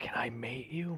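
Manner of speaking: very quiet, hushed creature whisper. Voicing a creature that leans into a character's ear: creature whispering. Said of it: "Whispers into your ear".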